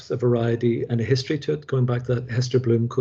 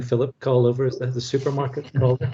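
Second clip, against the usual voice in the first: ordinary talk, nothing marked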